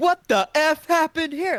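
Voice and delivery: abrupt, loud put-on outrage, very high pitched. Describing a man who shifts from calm narration, imitating his sudden outraged exclamation. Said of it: "goes from calmly speaking ... then immediately".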